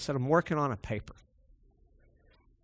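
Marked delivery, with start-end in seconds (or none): 0.2-1.1 quiet, sour attitude. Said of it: "I was working on a paper with a sour attitude".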